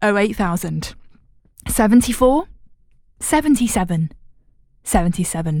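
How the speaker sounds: slow, deliberate, spaced out digit by digit. Giving the phone number a second time, the speaker says it slowly. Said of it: "I'm going to say it slowly".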